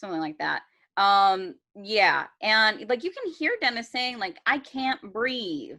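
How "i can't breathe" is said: imploring, begging, pleading voice. Retelling what a trapped son says to his mother: imitating someone pleading. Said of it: "he's pleading with his mother".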